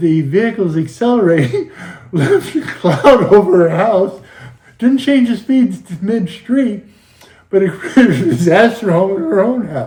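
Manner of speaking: talking through laughter. Telling a story about a soot-covered house, laughing while talking. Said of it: "I'm sorry I'm laughing".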